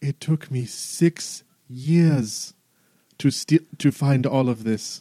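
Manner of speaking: very slow, crestfallen, dejected, depressed tone. A character looks down at his armor after poofing back in: depressed. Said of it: "He's just like all depressed".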